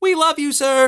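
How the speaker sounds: put-on girl's very high, shrill cheering shout. Retelling a girl calling out during a race: imitating a girl shouting. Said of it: "another girl shouted".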